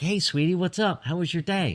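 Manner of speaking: put-on, very high, bright, cheery happy voice. Describing calling out to someone while hiding in the cave, imitating a happy voice. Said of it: "shouting out with a happy voice".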